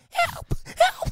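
high-pitched helium voice. Showing how someone short of air in helium calls out, high-pitched helium voice. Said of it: "you have like a high-pitched voice".

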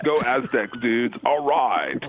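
put-on California Valley dude accent. Speaker who grew up in the San Fernando Valley cheers: put-on Valley dude voice. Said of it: "I can still do that voice because I grew up in the San Fernando Valley".

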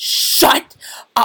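put-on angry yelling. Retelling how the music teacher blew up at the class: imitating a teacher blowing up. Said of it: "And she would just blow up".

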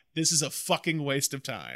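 ordinary talk

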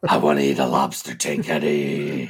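very deep, low movie monster voice. Telling how reading aloud got more fun, the speaker does the Venom voice. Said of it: "I do that voice to my kid".

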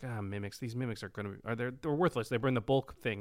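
ordinary delivery

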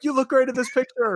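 shrill, shouty, very high all-caps yelling. Acting out how a baby boomer's all-caps Facebook comment reads, mock-yelling a Facebook comment. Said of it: "Why are you yelling?".

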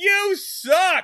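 put-on, very high, shrill, blaring megaphone shout. Retelling how Opie stands on the piano, imitating a megaphone yell. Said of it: "get a little megaphone and go".

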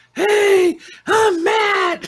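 put-on drunken voice, very high and loud. Imitating a co-host showing up late at night: imitating Matt drunk. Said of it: "I sound just like you when you're drunk".

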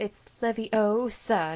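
"Leviosa" with stressed, slowly stretched O. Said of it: "one of the things that you hear the most is".

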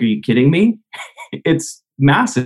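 disbelieving, incredulous, laughing through the words. Retelling the reply of a man met for coffee, imitating someone laughing incredulously. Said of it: "And he kind of like laughs".

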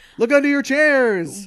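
booming, very high, loud belted shout. Continuing the bit for a co-host, giving away prizes: Oprah voice. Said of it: "You went into an Oprah voice".

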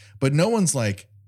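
ordinary talk, nothing marked

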